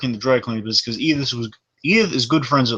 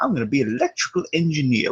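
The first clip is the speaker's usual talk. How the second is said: swooping, animated put-on voice with hammy pitch swings; 4 dB quieter than usual. Quoting Lionel Jefferson playing down to Archie: Goldie Wilson-like put-on voice. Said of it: "He basically puts on a voice like".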